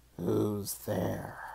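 creaky, rough, croaky voice. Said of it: "a voice croaked".

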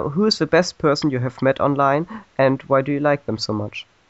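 plain

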